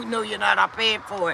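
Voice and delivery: ordinary talk, nothing marked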